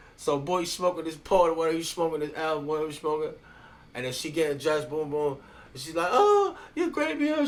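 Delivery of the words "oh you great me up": very high, drawn-out, slow, weepy sobbing whine. Retelling a woman's reaction as she gets dressed: imitating a woman crying. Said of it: "She's all crying and stuff".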